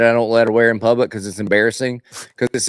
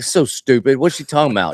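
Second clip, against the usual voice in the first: mock grumbling, acted out; 2 semitones higher than usual. Retelling own reaction to her do-over idea, retelling own grumbling. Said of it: "And I'm grumbling".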